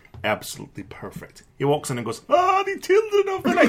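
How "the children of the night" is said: put-on very high vampire voice with Transylvanian accent. Retelling how Gary walked in and said it: Sesame Street Count voice. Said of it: "that's the count from Sesame Street. That's the voice I would do".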